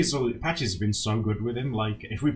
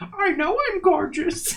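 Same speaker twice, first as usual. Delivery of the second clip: put-on loud, very high-pitched, shrill grandma voice; 5 dB louder than usual. Retelling what an old grandma said to a boy, in her voice: high-pitched voice. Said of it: "she said in like this high pitched voice".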